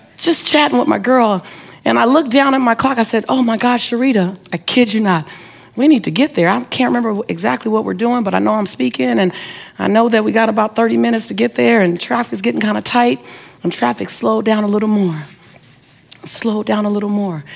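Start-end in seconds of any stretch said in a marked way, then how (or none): none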